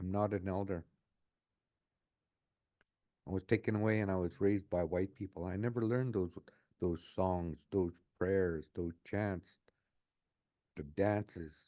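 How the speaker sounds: normal talking voice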